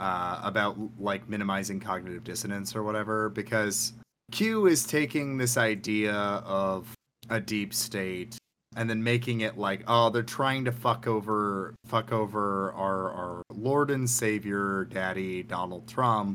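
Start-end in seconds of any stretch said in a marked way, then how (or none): none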